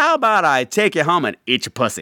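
acted shout, toned down to mild half-voiced yell. Retelling a loud remark made in a movie theater: imitating own loud remark. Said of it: "And I said really loud".

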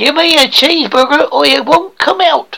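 clumsy, bad attempt at an American accent. Asked by the other speaker to say it in an American accent, attempted American accent. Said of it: "say it in the best American accent you possibly can".

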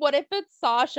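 ordinary talk

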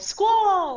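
piercing, very high eagle screech. A player whose character has an eagle mouth yells a name: yelled in eagle voice. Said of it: "In my best Squall impersonation that my eagle mouth can make".

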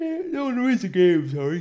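very loud, high words stretched by a yawn. Podcast host corrects a point about the game, yawning while speaking. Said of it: "Apologies for the yawn".

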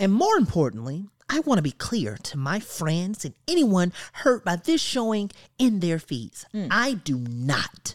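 caricatured, put-on woman's speaking voice.

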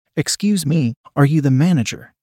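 plain reading voice

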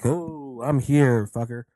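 very slow, creepy, drawn-out delivery. Retelling a wrestling segment, quoting a creepy line: imitating Scarlett being creepy. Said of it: "is all fucking creepy to him".

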